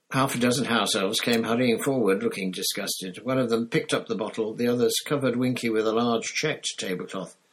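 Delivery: plain reading voice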